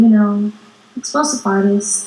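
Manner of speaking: ordinary talk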